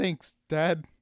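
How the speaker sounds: cracking, breaking voice. Thanking the one he calls Dad after being praised, voice cracking. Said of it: "I don't like the voice crack every time".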